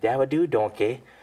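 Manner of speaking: big cartoon ogre voice. Retelling phone calls to his young son: Shrek voice. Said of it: "he always thought I was Shrek".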